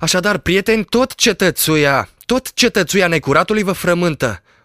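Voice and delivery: lightly mocking shout. A doctor arriving at a gathering at the inn greets everyone, shouting, slightly ironic. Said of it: "cu un ton ușor ironic, strigă".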